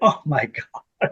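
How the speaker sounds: whispered, hushed, breathy panic under the breath. Telling a story about a guy asking if they're alright, imitating freaking out. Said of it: "and I'm freaking out".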